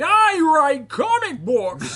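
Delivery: shrill, booming voice with high swooping pitch. Joking about the Daredevil trailer: Frank Miller voice. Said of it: "There's our Frank Miller voice".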